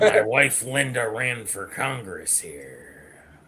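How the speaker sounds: put-on gruff voice. Acting out a pulled-over man boasting to the one who stopped him, imitating a gruff voice. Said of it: "you get all gruff".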